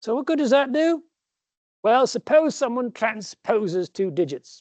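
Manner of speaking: terrible put-on British accent. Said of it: "My British accent there is terrible".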